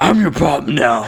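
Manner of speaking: loud, booming monster-like voice. Trying a Vin Diesel line that comes out sounding like a monster.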